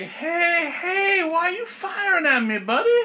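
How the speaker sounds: very high, slow, drawn-out plant-monster creature voice. Voicing a plant monster that asks why it is being shot at: voicing a plant monster. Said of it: "And it's like".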